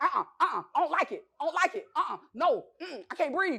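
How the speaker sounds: flustered, high, panicked stammer. Retelling jumping into water with a block at the neck: imitating panic. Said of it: "And I'm panicking".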